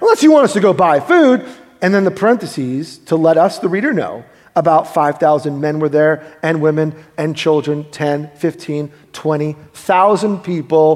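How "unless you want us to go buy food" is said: derisive, scoffing, pitched-up mocking jibe. A speaker retells what the characters in a passage said, mockingly quoting. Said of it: "so mockingly".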